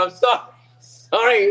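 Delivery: stammered, broken up by helpless laughter. Retelling a gambling kid's reaction after losing, imitating someone laughing while apologizing. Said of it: "just started laughing".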